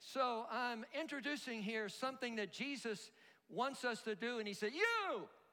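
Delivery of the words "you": high, loud exclaimed "you". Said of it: "I don't know whether he said it like that".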